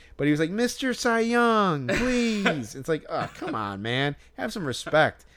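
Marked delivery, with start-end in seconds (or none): 0.5-2.8 very high, very slow, drawn-out pleading yell. Retelling how a fan yelled to a player for an autograph: imitating a fan yelling. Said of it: "this guy was yelling".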